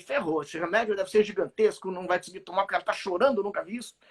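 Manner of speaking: normal talking voice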